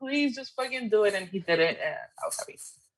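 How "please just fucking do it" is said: put-on high, desperate, begging pleading shout. Retelling watching the ending with a cousin: retelling screaming at the TV. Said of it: "I was literally screaming at the, at the T V".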